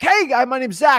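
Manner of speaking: fiery, excited, high and loud.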